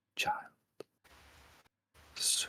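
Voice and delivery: faint, airy whisper like wind. Voicing a whispering entity speaking to a player's character: whisper like wind. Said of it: "there is a whisper, almost like wind".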